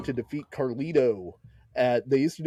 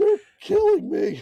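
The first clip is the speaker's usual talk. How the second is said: put-on wrestler voice in pain, higher; 4 dB louder than usual. Recalling a funny wrestling moment: Terry Funk impression in pain. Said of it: "your Terry Funk impression".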